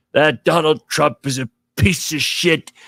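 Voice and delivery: mock cranky, grumpy, angry old-man voice. Retelling what was said in a video clip: imitating grumpy angry Robert De Niro. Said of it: "this grumpy, angry old man".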